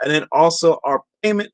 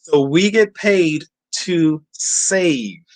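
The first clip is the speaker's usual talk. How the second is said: slow, unhurried, deliberate, each word landing. Talking about physical gold, stating a point slowly to drive it home. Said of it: "I'm saying that slowly".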